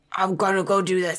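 gruff put-on character voice, held throughout. Showing how to say a line in character, Batman voice. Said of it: "in your best Geralt voice ... That was more of a Batman voice".

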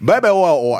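Southern man accent. Showing how a nickname should be said, in a southern man accent. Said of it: "You got to say it like a Southern man".

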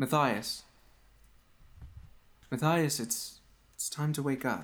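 distant, faraway feminine voice. Narrating a scene, a voice calls matthias to wake up: distant feminine voice. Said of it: "The voice is feminine. It sounds kind of far away".

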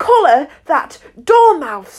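shrill, loud, screeching shriek. In court, the queen shrieks out at the dormouse. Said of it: "the queen shrieked out".

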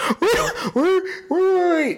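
very high-pitched laughing cry of disbelief.

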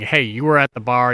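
ordinary talk

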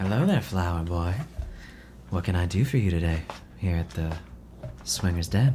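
sensual, flirtatious, sultry, seductive voice. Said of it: "She has a very sultry voice".

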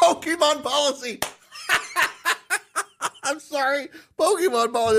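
high, cracking-up laughing outburst.

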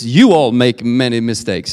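you stressed as the key word. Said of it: "a lot of people actually read this".

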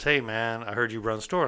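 ordinary talk, nothing marked

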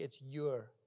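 very low, hushed stage half-whisper. Acting out a reply to the devil: pretend half-whisper. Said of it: "I would just whisper back grammatically".

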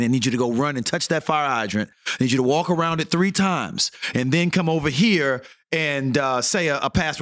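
ordinary talk

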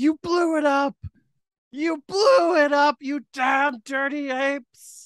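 very high, drawn-out scream. Asking about a new Charlton Heston: imitating Charlton Heston screaming. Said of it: "the new Charleston Heston going".

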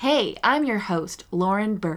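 put-on American accent. Asked what you do for an American accent, give your Lauren Burke impression, American accent. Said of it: "do an American accent, do Lauren".

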